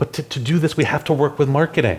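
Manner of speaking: play-acted alarmed, aghast, high, panicked tone. Retelling what a product manager said after a goal was set, imitating a panicked voice. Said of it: "in a panicked voice".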